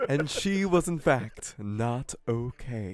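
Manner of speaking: slow storybook narrator voiceover delivery. Repeating the other player's joke line: imitating the narrator voice. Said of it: "'cause apparently that's the narrator voice".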